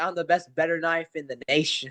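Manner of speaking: plain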